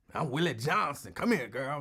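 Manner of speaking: put-on old geezer character voice. Acting out an imagined old man who jiggles pocket change: put-on old man voice. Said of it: "That sound like an old man name".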